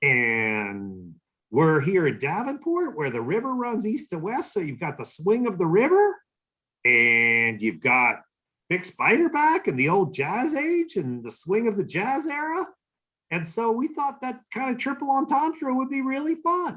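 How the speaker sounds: very high-pitched, animated, swooping sing-song voice. As a man explaining an idea to the speaker, imitating a very high-pitched voice. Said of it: "in his very high pitched voice".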